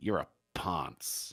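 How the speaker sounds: breathy whisper in a put-on American accent. Showing how the insult sounds with an American accent. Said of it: "with an American accent".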